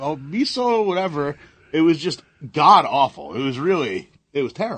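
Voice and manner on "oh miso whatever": put-on high-pitched, dim-sounding, dopey alien accent. Mocking a film character's stupid accent: imitating Jar Jar Binks accent. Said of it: "that stupid accent where he's like".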